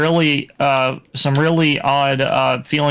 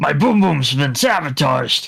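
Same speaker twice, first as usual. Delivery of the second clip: video game boss villain voice. Imagining the boss reacting to his own defeat: imitating Bowser. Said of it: "he's just like".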